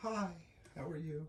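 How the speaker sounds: put-on sweet voice. Describing how her voice changes once recording starts, imitating her nice recording voice. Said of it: "cutting all your like nice, nice voices".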